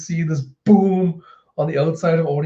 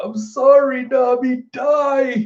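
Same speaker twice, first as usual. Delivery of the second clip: very slow, furious weeping, die drawn out; 9 semitones higher than usual. Retelling a scene where Zeus cries angrily: mock angry crying as Zeus. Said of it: "he's crying angry".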